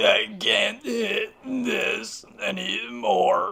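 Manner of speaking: very slow, flat, droning robotic voice. Describing getting too high after about three hits; Stephen Hawking voice. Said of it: "I I fucking turn into Stephen Hawkins".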